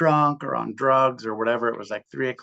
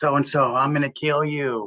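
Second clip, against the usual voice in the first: put-on screaming, menacing yelled tone; 4 semitones higher than usual. Recounting being woken at night by someone outside screaming a name; retelling someone screaming. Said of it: "they were screaming somebody's name".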